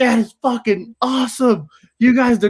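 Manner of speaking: yelling. Retelling people in cars who yelled from their windows: imitating people yelling. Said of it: "yelling at us".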